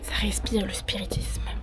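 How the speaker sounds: soft, unvoiced whisper.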